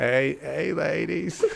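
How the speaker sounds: put-on Southern US politician voice. Doing an impression after being asked for Bill Clinton: Bill Clinton impression. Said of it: "do Bill Clinton".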